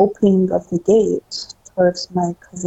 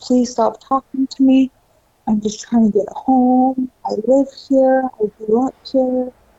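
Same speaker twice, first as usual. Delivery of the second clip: desperate, high begging cry, kept small; 6 semitones higher than usual. Retelling running home while someone kept talking to them, retelling a yell. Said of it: "yelling out loud".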